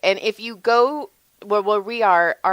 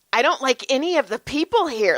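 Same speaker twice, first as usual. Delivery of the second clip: put-on panicked voice, higher pitch; 4 semitones higher than usual. Retelling a son's reaction to loud store music: imitating Brody panicking. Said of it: "he was, like, panicking".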